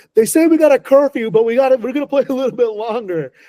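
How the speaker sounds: high, loud rock-star style yell.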